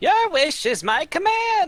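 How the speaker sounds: very high, drawn-out sing-song, every word stretched. Voicing Ergo after being asked for his voice: Claptrap voice. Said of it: "My, my best Claptrap".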